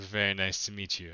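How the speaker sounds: speaking with a light chuckle. Voicing a character who greets a player, chuckling while speaking. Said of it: "chuckles and says".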